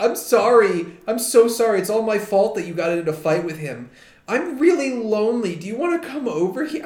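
tearful, apologetic tone. Retelling a film scene where a woman cries and apologizes: imitating someone crying. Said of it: "crying and is like".

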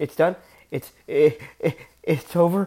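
acted, frightened stammering with stuck repeated words. Retelling someone's reaction at the end: imitating someone scared. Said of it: "He was so, like, scared".

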